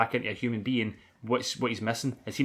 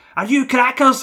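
put-on Scottish accent, very high, shrill and loud; 13 semitones higher, 13 dB louder than usual. Retelling a film scene where a mother screams: scottish accent. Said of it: "in his Scottish accent".

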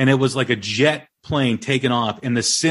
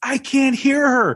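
put-on top-of-the-lungs shouting, high, drawn-out scream; 12 semitones higher than usual. Retelling a concert-goer calling her babysitter, imitating someone screaming. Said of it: "she's screaming at the top of her lungs".

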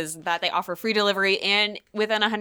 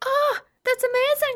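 very high, top-register voice; 3 dB louder than usual. Reacting to a product explanation, in a high-register voice. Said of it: "I'm practicing my higher register".

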